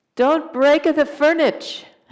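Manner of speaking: funny little mock Italian accent. After a dish crashed in the kitchen, quoting Swami in Swami's fake Italian accent. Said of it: "in a fake Italian accent".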